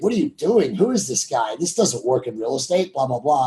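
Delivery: normal talking voice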